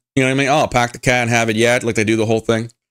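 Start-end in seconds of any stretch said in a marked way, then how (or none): 0.5-1.9 stock put-on Boston accent. Greeting a viewer from boston with the accent everyone does: mock boston accent. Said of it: "everyone just does the same accent".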